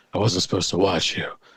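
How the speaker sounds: breathy, airy, breath-filled voice. Describing a man who hits on a woman, imitating a breathy voice. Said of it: "He's a breathy voice like that".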